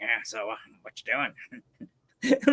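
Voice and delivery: very slow, soft, sing-song, dopey cartoon-teen drawl. Recalling doing it in the school hallway, a Beavis impression. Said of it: "I did my Beavis".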